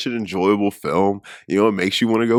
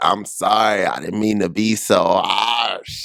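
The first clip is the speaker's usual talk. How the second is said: put-on French accent. Describing a movie's head chef, quoting him in a french accent. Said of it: "he's got the great little French accent".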